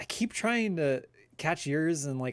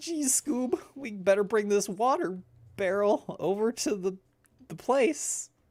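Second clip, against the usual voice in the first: pitched-up cartoon character voice; 8 semitones higher than usual. Doing impressions on request, a Shaggy impression. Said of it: "I did the Shaggy impression".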